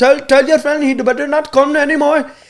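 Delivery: put-on Middle Eastern–accented speech. Retelling a confrontation, speaker quotes the man who warned him: put-on Middle Eastern accent. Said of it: "you don't want to hear my Habibi voice".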